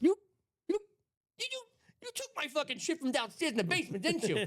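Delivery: mock pissed-off, furious, accusing rant, very high pitch. Retelling a relative's reaction on opening his own drills: imitating someone pissed off. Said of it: "He was pissed".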